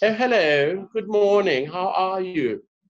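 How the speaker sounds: put-on English accent. Speaker imitating little Zulu kids at school greeting people, very English accent. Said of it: "their little Zulu kids are so English".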